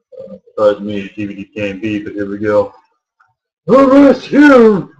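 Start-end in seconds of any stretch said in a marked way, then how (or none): 3.7-4.8 put-on very high, loud elderly old man voice. Trying out a character voice not used in a while, in an old man voice. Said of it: "get my uh, old man voice going on here".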